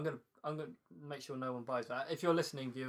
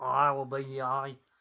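put-on Manchester accent; 7 dB louder than usual. Chatting about bands with friends, dropping into a generic Manc impression. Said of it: "That was a generic Mank impression".

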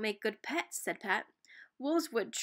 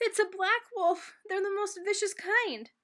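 put-on high, frightened boy's voice, blurted out; 8 semitones higher than usual. Narrator reads a boy's line as a wolf enters a room of children: frightened boy's voice. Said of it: "announced in a frightened voice".

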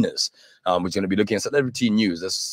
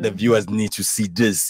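put-on Russian accent. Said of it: "you had to use the Russian accent".

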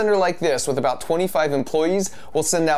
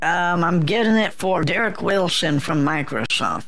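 put-on elderly woman voice. Pretending to be an old lady on camera, answering the caller, in an old lady voice. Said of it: "makes his voice sound like an old lady".

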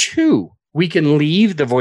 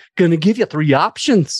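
attempted Scottish accent, a Scottish brogue; 2 semitones higher than usual. Retelling giving a client three options, in a Scottish accent. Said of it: "I don't know if I'm doing a good accent for Scottish".

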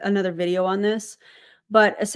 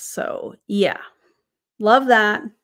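mocking, dry, sarcastic tone of fake approval. Commenting on a nurse returning to work: sarcastic. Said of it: "That's sarcasm, by the way".

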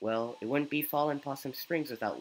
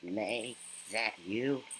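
low, put-on goat voice; 5 semitones lower, 3 dB quieter than usual. Game player voicing a goat character calling out to May: goat voice. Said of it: "I have to do a goat voice".

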